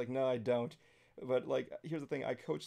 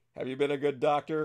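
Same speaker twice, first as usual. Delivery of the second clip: put-on friendly ordinary voice, louder; 2 semitones higher, 9 dB louder than usual. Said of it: "he sounds like your neighbor Stan".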